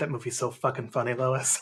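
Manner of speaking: mock mutter under breath. Recalling a moment at a restaurant, retelling a mutter under breath. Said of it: "Just under his breath".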